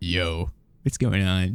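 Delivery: low, laid-on, put-on podcaster voice. Joking about how guests might answer a greeting: put-on podcaster voice. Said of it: "like a podcaster voice back".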